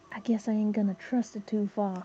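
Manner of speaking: hushed whisper. A role-play character answers a companion's remark about their guide: whispering back. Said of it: "Quentin kind of just whispers back".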